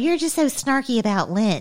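high-pitched whining. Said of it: "you're like".

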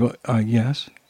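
put-on timid, meek voice. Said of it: "quite timidly".

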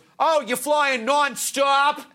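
put-on local Boston accent. Retelling a man's answer when asked about American Airlines, in a Boston accent. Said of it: "that's a Boston accent".

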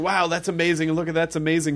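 ordinary delivery

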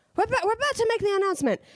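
curt, high, rattled-off cashier voice. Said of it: "And she goes".

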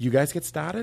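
Boston accent with broad vowels. Practicing a Boston accent as a touchstone phrase, Wahlberg Boston accent. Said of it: "let's practice our Boston accent".

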